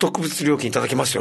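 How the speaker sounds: ordinary talk, nothing marked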